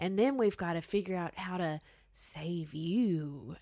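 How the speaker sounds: hushed, menacing cartoon-villain half-whisper, word you stretched. Recounting what he said, which felt like foreshadowing: retelling a near-half-whisper. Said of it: "he almost like whispered it".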